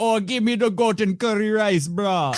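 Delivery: put-on Jamaican patois, pitched very high.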